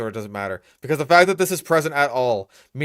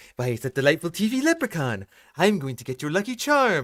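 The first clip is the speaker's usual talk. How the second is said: put-on cartoon villain voice, pitched higher; 5 semitones higher than usual. Retelling a cartoon scene with a power drill: Mister Burns impression. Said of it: "when Mister Burns j-, gets his power drill and he's just like".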